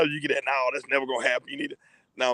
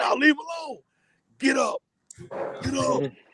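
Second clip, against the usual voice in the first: very high-pitched called-out shout; 12 semitones higher than usual. Retelling what he yelled at a player on the ground: imitating own past yelling. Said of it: "I remember yelling".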